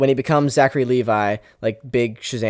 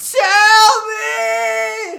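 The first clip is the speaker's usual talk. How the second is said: mock very high, loud shout. Acting out a character's outburst from the show: imitating a loud shout. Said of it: "was that too loud?".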